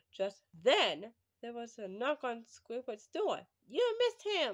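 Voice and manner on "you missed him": very high, shrill, high-pitched shout. One character calls out to another who is opening his door; shouted. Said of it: "Shouted Spongebob".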